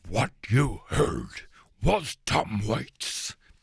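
goofy puppet cartoon monster voice. Radio host back-announcing a track, in a Cookie Monster voice. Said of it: "can I back announce in a Cookie Monster voice".

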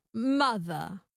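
non-rhotic transatlantic accent. Speaker demonstrating words for another to repeat, in a transatlantic accent. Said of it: "the transatlantic accent".

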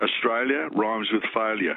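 ordinary talk

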